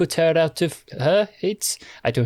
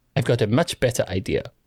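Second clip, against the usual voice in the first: normal talking voice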